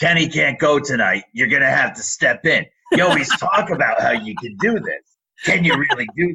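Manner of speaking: put-on New York Staten Island accent. Retelling how the Madison Square Garden supervisor told you to step in, Josephine Traina's thick Staten Island accent. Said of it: "in her thick Staten Island accent".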